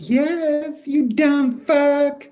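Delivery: loud, very high mocking falsetto, drawn-out yes. A ranger answers his own call to the vanished woman, in a falsetto. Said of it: "He answered himself in a falsetto".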